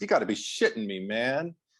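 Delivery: ordinary delivery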